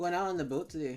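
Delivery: exaggerated, thick Minnesota accent. Joking about how people talk in minnesota: exaggerated minnesota accent. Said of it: "I'm, like, over-tuning it".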